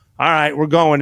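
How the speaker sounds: plain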